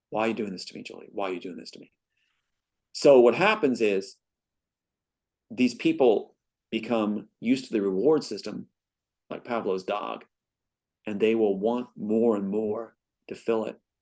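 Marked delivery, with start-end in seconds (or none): 0.1-1.9 desperate pleading voice. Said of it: "My dad's begging her to stop".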